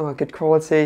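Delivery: ordinary talk, nothing marked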